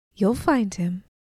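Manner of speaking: usual speaking voice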